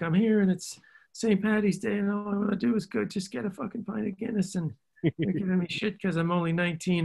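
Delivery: put-on very high-pitched Irish accent. Retelling an actress's stories between takes: imitating Saoirse Ronan's Irish accent. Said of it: "she got this great Irish accent".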